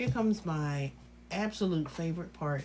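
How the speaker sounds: ordinary delivery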